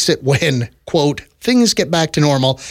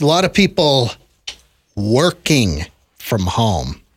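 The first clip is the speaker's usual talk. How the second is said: mocking, judgmental, swooping sarcastic sing-song; 3 semitones lower than usual. Talking about people working from home: sarcastic and judging. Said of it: "he said that sarcastically and judgingly".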